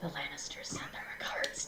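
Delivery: close, breathy, intimate whisper. Retelling how Ami leaned in and spoke, whispering. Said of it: "leans in and whispers".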